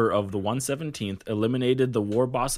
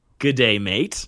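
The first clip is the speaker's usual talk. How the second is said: loud, fake, put-on Australian accent; 6 dB louder than usual. Reading out common phrases of the Aussies: put-on Australian accent. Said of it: "Common phrases by the Aussies are".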